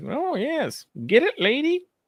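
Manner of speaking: very high, cheering sing-song voice.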